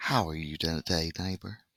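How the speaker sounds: put-on cheerful children's tv host voice. Tired before starting the review, the speaker does a Mr. Rogers impression. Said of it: "change my voice so I sound more like Mr. Rogers".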